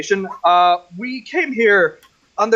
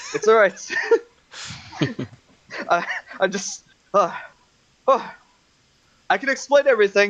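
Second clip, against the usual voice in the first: winded, halting, stumbling, catching breath; 2 semitones higher than usual. In a role-play, a character tries to explain himself to onlookers; out of breath. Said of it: "Just give me a few moments to catch my breath".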